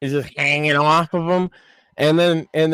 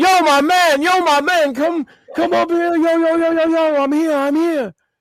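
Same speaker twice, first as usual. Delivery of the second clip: very high, nonstop, insistent hollering; 13 semitones higher than usual. Retelling how a customer called to the cook: imitating a man yelling. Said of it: "he just starts yelling".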